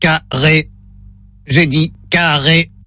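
low, level, flat monotone robot voice. During a hearing test on the phone, the caller plays the robot: robot voice. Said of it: "Voix de robot enclenchée".

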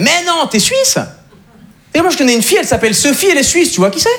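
high, excited, eager French man voice.

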